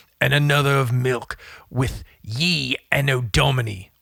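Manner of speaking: put-on creepy, spooky voice. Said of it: "I'm just gonna use this".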